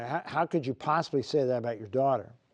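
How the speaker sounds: usual speaking voice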